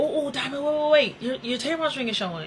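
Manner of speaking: mock-worried, caring, put-on concerned tone. Showing how the other person could have pointed it out: acting concerned. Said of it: "That would have been more concerned".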